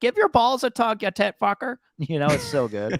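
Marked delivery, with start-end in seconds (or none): 0.0-1.8 very high-pitched, mocking, taunting tone. Quoting a show character talking trash from a bathroom stall: Shoresy voice. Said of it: "He's doing the voice".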